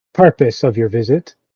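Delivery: firm, stern, level-headed, sensible tone. A figure the guards let you approach asks a visitor's purpose: stern but sensible tone. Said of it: "in a very stern but sensible tone".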